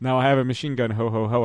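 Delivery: ordinary talk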